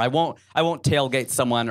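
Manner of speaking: normal talking voice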